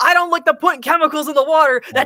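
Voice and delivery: loud high-pitched ranting. Speaker acts out a remix of Alex Jones from InfoWars: Alex Jones yelling impression. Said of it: "starts yelling what you just said".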